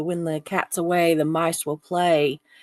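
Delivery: normal talking voice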